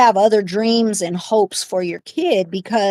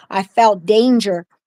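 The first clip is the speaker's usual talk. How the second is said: plain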